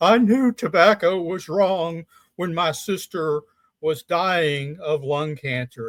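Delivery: put-on weepy, tearful, fake crying. Mocking a man's Sixty Minutes appearance, quote him: mock crying as ManBearPig. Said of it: "when he went on sixty minutes crying".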